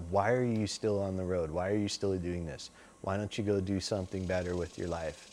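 put-on dead serious tone. Retelling how the bass player questioned him backstage: imitating someone dead serious. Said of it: "he was dead serious".

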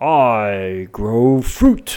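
kindly, benevolent tree creature voice, drawn-out "I". Voicing a treant sapling that speaks to the players: voicing a treant sapling. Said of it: "treant sapling looks down at you, smiles benevolently".

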